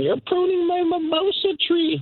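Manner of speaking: high, mock angry yelling.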